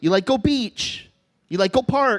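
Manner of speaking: local Hawaiian pidgin English speech. Talking to a pit bull: speaking pidgin. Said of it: "There's one time I will talk pidgin".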